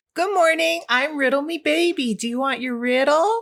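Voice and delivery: high, creepy haunted doll voice. Voicing a haunted doll greeting a player before a riddle: haunted doll voice. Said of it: "do a haunted doll riddle".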